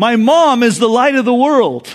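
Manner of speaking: put-on acted excited kid yelling. Telling a story, the speaker acts out what a little boy yelled: retelling an excited yell. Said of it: "his face brightened and he yelled out".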